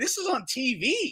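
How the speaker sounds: ordinary delivery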